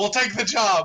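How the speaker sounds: hollering. Putting a gold coin on the table in character, accepting the job: yelling. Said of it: "and I yell".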